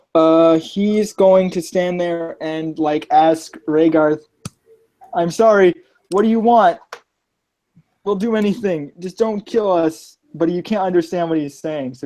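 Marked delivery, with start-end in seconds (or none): 5.1-10.1 frightened, whimpering, pleading tone. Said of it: "He's, like, whimpering".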